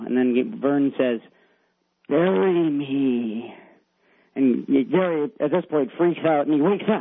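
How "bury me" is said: put-on spooky, frightening voice. Retelling a story where Vern appears in the window, the speaker gives his line in a scary voice. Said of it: "In a really scary voice".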